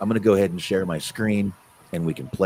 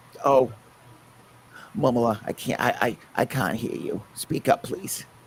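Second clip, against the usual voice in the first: put-on raised-pitch elderly voice; 5 semitones higher than usual. Recalling calls where the grandfather picked up the phone, imitating grandfather on the phone. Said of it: "And that's all I would hear".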